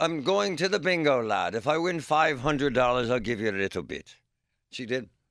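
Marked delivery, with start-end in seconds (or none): 0.0-4.2 put-on Irish accent, old woman voice. Remembering his grandmother who played bingo every day, doing her Irish grandmother accent. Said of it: "My Irish grandmother".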